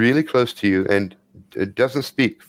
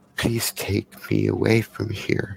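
put-on a child's close, hushed whisper; 4 dB quieter than usual. Narrating a scene where a kid leans against the listener's ear, whispering. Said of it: "And whisper says".

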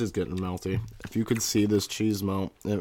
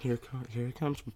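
soft, fake, half-whispery ASMR voice; 4 semitones higher, 7 dB quieter than usual. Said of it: "a little bit whispery".

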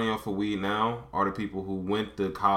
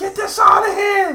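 acted yell, higher and louder; 13 dB louder than usual. Acting out how the dad yells at the aunt: imitating the dad yelling. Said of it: "he'll snap and he'll yell".

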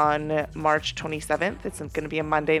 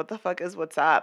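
ordinary delivery

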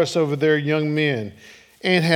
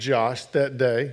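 ordinary talk

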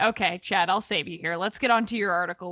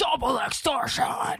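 loud arena hype monster truck rally announcer voice; 4 semitones higher than usual. Speaker showing how a term sounds in their own head: monster truck rally announcer voice. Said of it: "monster truck rally announcer".

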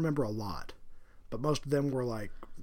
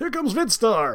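booming, very high 80s pro-wrestler hype voice; 11 semitones higher, 13 dB louder than usual. Comparing two old VCRs, giving one of them an 80s wrestler voice. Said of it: "one sounds like an 80s wrestler".

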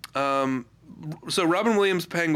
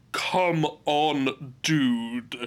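put-on American accent. Mocking an actor's American accent in a film role: imitating Tim Curry's American accent. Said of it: "He's doing an American accent".

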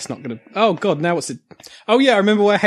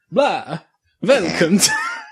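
spooky put-on vampire voice. Showing an idea for an episode intro, Dracula voice. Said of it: "I was going to do like a Dracula voice".

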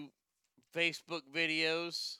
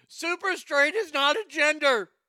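shrill screaming, very high-pitched and very loud; 10 semitones higher, 9 dB louder than usual. Retelling how people react to a trend: imitating people screaming. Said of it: "they're screaming".

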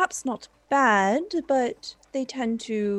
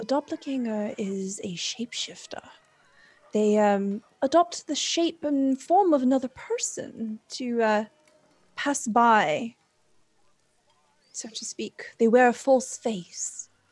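hushed, lowered voice. Roleplayed character nestles close to a companion under the table, lowered voice. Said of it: "she lowers her voice".

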